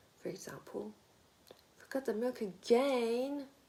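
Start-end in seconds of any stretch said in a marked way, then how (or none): 1.8-3.5 exasperated, fed-up tone rising slightly. Intonation lesson on complaining about forgotten milk: exasperated, with a slight rise. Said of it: "emphasize the rhythm and a slight rise in intonation for exasperation".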